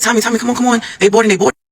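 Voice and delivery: high-pitched, calling-out scream. Retelling calling a friend to the boarding plane: retelling own scream. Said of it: "So I'm screaming to her".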